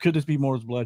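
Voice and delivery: ordinary talk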